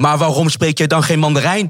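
peeved, irritated, slightly angry tone. Retelling how a stranger replied after hearing no mandarin, imitating an annoyed man. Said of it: "bozig, echt een beetje geïrriteerd".

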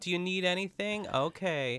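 put-on condescending voice. Imitating how Wendy talks to Mary: condescending Wendy impression. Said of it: "the way that Wendy talks to Mary is so condes-".

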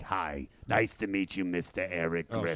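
very low, gravelly motherly voice. Explaining that mom sounds like the speaker: imitating mom's gravelly voice.

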